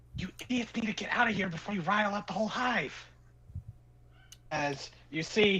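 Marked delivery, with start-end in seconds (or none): 0.1-2.9 whispered call, much higher pitch. Game master voices a hidden figure calling to the group; whisper call. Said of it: "kind of whisper call".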